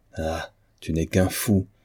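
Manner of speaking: usual speaking voice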